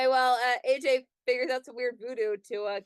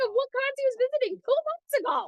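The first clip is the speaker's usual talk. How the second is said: shouting, pitched higher; 13 semitones higher than usual. Talking over another speaker about an announcement: yelling. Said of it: "You're yelling so loud".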